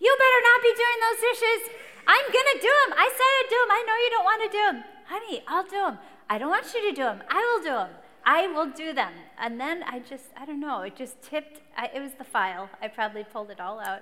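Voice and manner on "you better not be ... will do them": shrill, very high, very loud hollering. Retelling a fight, yelling from another room: imitating her own yelling. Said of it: "I started yelling from the laundry room".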